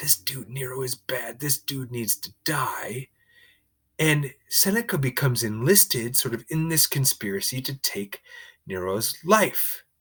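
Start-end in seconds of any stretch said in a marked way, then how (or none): 0.0-3.1 put-on conspiratorial whisper, quieter. Acting out conspirators plotting against Nero: imitating conspirators whispering. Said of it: "everybody's going around whispering".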